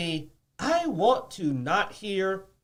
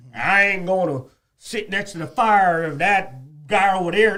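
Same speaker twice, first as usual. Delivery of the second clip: put-on Southern accent. Acting out a person in a plane crash: imitating a southern accent. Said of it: "you gave the racist guy a Southern accent".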